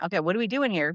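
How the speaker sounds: ordinary talk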